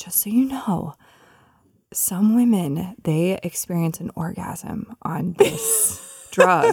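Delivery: slow, confiding, hushed whisper. Retelling what was whispered into her ear during an infusion: imitating a whisper. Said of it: "she, like, whispers into my ear".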